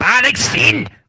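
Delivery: angry mock-German yell, high and loud. Showing how to say the name so it sounds German: angry German-sounding shout. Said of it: "say it really angrily".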